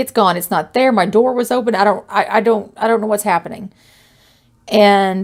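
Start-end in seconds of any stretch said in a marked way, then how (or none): none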